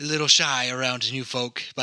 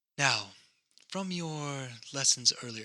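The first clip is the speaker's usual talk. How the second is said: quiet put-on whisper, getting quieter; 8 dB quieter than usual. Voicing a character who leans over to another: whispering in character. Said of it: "she's kind of whispering this to you".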